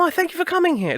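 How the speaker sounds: put-on posh English accent. Joking about how humanoid aliens on screen talk, in a posh British accent. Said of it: "it is always like the posh British accent".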